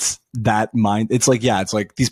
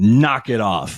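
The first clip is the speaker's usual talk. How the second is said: dry, sarcastic scolding tone. Describing how you'd answer self-styled activists, acting out a sarcastic remark. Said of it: "me sarcastically being like".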